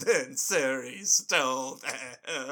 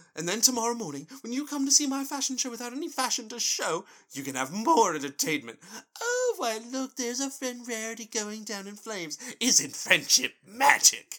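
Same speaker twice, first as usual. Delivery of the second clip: put-on over-the-top dramatic pony voice, higher; 8 semitones higher than usual. Reading aloud an over-the-top Rarity monologue from the episode. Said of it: "the most extra Rarity monologue of all time".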